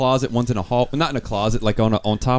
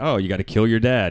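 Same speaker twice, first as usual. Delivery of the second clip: ordinary delivery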